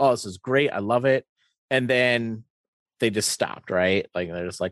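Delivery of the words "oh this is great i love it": plain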